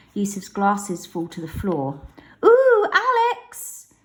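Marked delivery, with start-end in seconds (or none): 2.5-3.9 very high, loud mocking cry. Narrator reads a character parroting another's cry while holding him in a headlock, high mocking voice. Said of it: "Juice parrots in a high voice".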